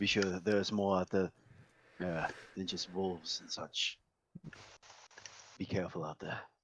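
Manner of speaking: showman bluster dropped to a confiding, leaning-in tone. The carnival leader warns the two travelers before returning to his showman voice, leaning-in warning. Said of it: "Yeah, I'm the main carnival leader, / Then he leans into both of you. / Yeah, I'm the main carnival leader, / As he goes back to his regular hyped up voice".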